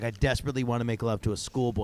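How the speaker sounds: ordinary talk, nothing marked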